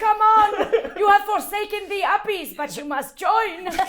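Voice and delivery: shrill yelling, very loud and high. A player's character shouts back to Kringus, shouting. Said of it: "I'm sh- shouting back to Kringus".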